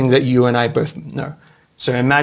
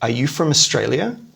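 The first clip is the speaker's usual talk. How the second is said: pitch climbing upward on the word Australia. Example of a yes-or-no question, rising pitch on Australia. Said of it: "The intonation goes up".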